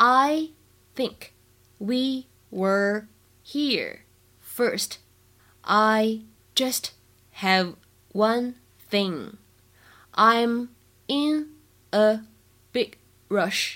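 very slow, spaced-out, word-by-word reading.

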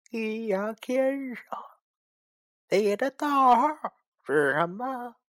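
put-on cold, eerie slurred speech. Narrator reads a spirit's cold question to the storyteller, in an eerie slurred voice. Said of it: "他用阴阳怪气的声音对我冷冷地说".

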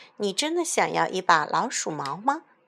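plain reading voice

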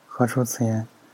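ordinary delivery, nothing marked

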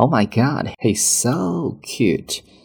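"so" stressed, stretched long and high. Teaching which word to stress in an english line: stretched, higher so. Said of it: "要强调的词呢是so 这样的一个单词，稍微拖长一些音调高一些".

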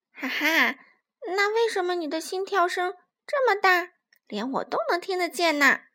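high-pitched, teasing, mocking, jeering taunt. In a story, a character taunts the little fox: mocking. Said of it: "小欢嘲笑道".

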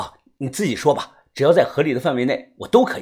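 plain

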